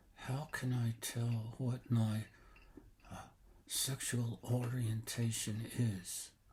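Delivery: quiet whispering. Unsure who is listening, a speaker asks a question, whispering. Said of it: "I want to uh, whisper anyway".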